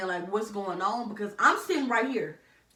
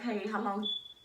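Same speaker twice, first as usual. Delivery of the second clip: put-on calm, polite, respectful voice, quieter; 5 dB quieter than usual. Retelling how the auntie asked the desk about the wait: imitating a calm, polite request. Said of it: "Calm, polite, and respectful".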